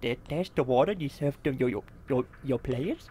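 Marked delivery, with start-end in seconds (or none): none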